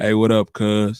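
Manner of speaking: mock bass-heavy female voice. Speaker mocks women with deep voices: imitating a bass-heavy woman's voice. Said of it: "Women that talk with a lot of bass in their voice".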